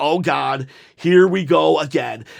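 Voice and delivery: ordinary talk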